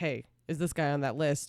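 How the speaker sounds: plain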